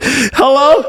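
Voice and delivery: very high hollow echo-chamber hello. Acting out calling into a dead phone line: mock echoing hello. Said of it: "I love the echo, too".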